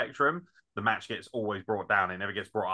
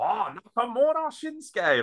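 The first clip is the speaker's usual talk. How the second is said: put-on mocking shout, much higher, slower; 13 semitones higher, 4 dB louder than usual. Retelling a performer's mocking shout to a small crowd, mock shout to the crowd. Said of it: "like just taking the piss".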